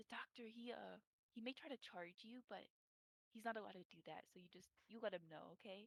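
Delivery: hushed voice brought down a notch. A character showing visitors the clinic, in a lowered voice. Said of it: "she lowers her voice a little bit".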